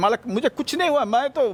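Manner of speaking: fast, high, mock brave bravado.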